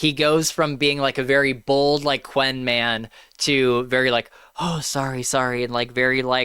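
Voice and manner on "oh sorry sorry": mock humiliated, shamed, humbled tone. Retelling how a man apologizes after being publicly fired: mock-humiliated apology. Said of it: "humi- humiliated and stuff".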